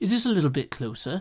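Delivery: put-on London British accent. Trying again to match how Zombie Cleo talks, in Zombie Cleo's London accent. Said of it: "slip more into the Thames".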